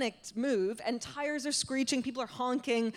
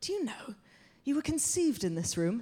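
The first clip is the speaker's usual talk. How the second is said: mock dreamy, faraway tone. Retelling what he said while waiting for the raccoons, retelling him speaking dreamily. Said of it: "he just like really dreamily goes".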